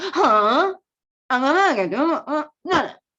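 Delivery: loud, high, startled huh, uh, no. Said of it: "It's like".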